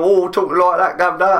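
bad put-on Cockney accent. Describing an American pen pal's accent, imitating a bad Cockney accent. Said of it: "proper, you know, Cockney accent".

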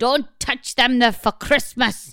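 put-on Scottish accent with a scolding tone. Telling a Christmas story, the speaker quotes their mum in a put-on Scottish-sounding accent. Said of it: "That was Scottish, wasn't it?".

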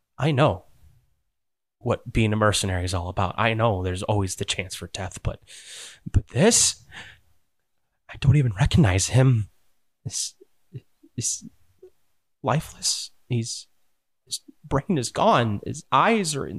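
panicking, barely holding it back. Narrating to the group, voice a traumatized mercenary panicking but trying to hide it. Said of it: "He's panicking".

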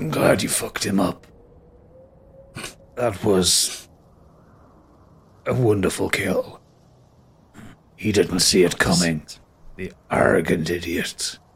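low, fading dying voice.

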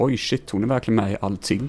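normal talking voice

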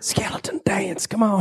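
soft, hushed whisper under the breath. Ordering a skeleton to dance without being heard: whispering. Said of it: "Can I whisper dance?".

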